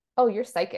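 put-on offhand, flat, matter-of-fact tone. Retelling what the retreat host said during light language: imitating a matter-of-fact remark. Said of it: "just so matter of fact".

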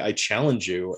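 normal talking voice

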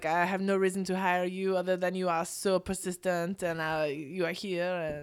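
put-on poised, refined, elegant French accent in English. Retelling what the woman said when hiring: imitating a French accent. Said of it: "and she had a French accent".

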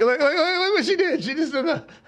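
put-on high, laughing, girly excitement. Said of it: "she's like".

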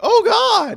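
put-on high-pitched exclaiming. Imitating the other speaker's reaction to a risky splash: imitating a high-pitched exclamation. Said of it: "Your pitch, your voice got real high-pitched".

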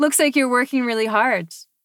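mock sarcastic tone. Retelling a man's remark about the speaker working, imitating a sarcastic remark.

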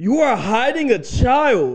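loud, high-pitched shout. Retelling what they would say downtown, facing a friend, in a very loud tone. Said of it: "I would occasionally say in a very loud tone".

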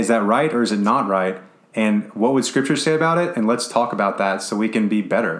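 normal talking voice

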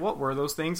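normal talking voice

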